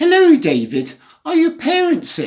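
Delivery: prim, very high-pitched, sing-song teacher voice. Retelling what an English teacher said at the door: imitating a prim voice. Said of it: "she said in a rather prim voice".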